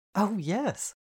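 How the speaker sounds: eager, high, bright exclaiming. Reading a story aloud, a character accepting an invitation: exclaiming. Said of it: "she exclaimed".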